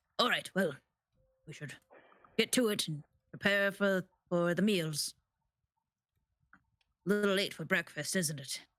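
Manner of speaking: rough, gruff speaking voice. Retelling what an overheard voice said in a room of four people: gruff voice. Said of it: "hear the gruff voice go".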